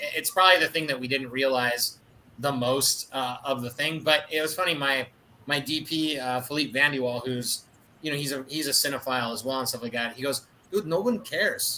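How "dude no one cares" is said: bad, poor Belgian accent. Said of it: "my shitty Belgian accent".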